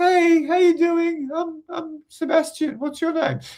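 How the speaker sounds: very high, unsure, confidence-drained voice, pitch shooting up. Describing a man losing confidence on a first date: imitating a voice going up. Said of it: "their voice goes up".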